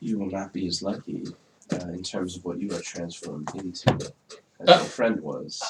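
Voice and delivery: put-on soft whisper, very close up. Playing a character who leans down to a woman: in-character whisper. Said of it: "I'm just going to whisper".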